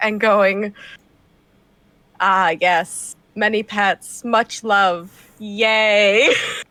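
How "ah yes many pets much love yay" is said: put-on cat voice, slow. Petting a cat and voicing it as if it could talk: voicing a talking cat. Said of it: "talking as if the cat could talk".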